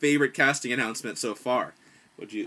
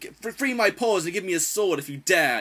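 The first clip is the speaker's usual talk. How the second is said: proud-sounding character voice, higher pitch; 7 semitones higher, 4 dB louder than usual. Showing how a small mouse character could sound: proud character voice. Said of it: "sort of a proud kind of".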